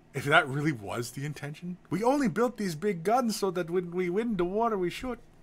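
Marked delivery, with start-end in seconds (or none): 2.0-5.2 terrible, hammy, clumsy German accent, pitched up. Imagining the Germans' reason for a confetti tank, terrible German accent. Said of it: "That's a terrible German accent".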